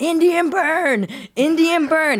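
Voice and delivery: mock, shrill, very high, stretched-out, drawn-out screaming. Recalling being grabbed by police at a college tailgate, retelling screaming. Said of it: "I started screaming".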